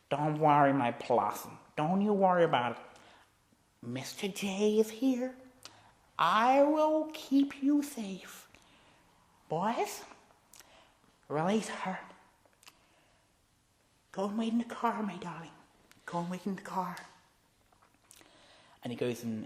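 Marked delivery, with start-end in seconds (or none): 0.1-16.9 very slow, drawn-out character voice with swooping pitch. Telling a made-up Batman story, acting out the Joker. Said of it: "And he's like".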